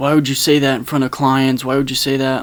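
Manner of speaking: ordinary delivery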